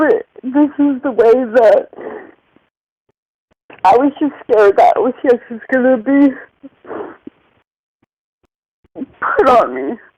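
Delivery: tearful, crying speech. Opening up about someone they love and apologizing for being emotional, crying. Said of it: "I'm crying".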